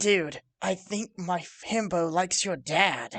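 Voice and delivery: whispering in an acted voice. Playing a character who whispers to another character: whispering in character. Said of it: "My character is gonna whisper to wa-".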